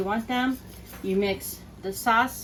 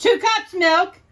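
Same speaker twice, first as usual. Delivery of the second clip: very loud and high voice, projecting out; 11 semitones higher, 11 dB louder than usual. Told to speak up toward the microphone while cooking, speaking up, projected. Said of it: "Speak up".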